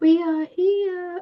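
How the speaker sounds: eerie, very high, creepy little voice. Speaker quotes the little voice in their head from a game: creepy Baldur's Gate voice. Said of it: "It's really creepy".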